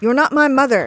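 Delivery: loud angry yelling. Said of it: "lose it and yell".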